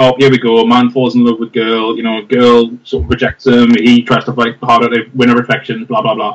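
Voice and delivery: ordinary delivery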